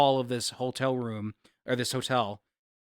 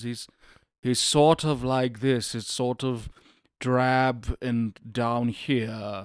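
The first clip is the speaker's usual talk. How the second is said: put-on drab low voice, much slower. Trying out an impression not yet worked out: drab, low Hitchcock voice. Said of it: "haven't really figured out a Hitchcock voice".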